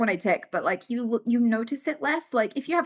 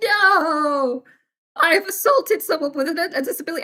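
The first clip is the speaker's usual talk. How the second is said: mock-mortified tone, higher and slower; 6 semitones higher, 4 dB louder than usual. Retelling a woman on a train reacting after offending the speaker, imitating mortified embarrassment. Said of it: "like mortally embarrassed and like".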